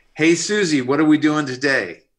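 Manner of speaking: very loud, high hollered shout. Recalling a childhood memory, act out him calling to your mom as he comes in, imitating someone shouting. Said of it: "he shouts into my mom".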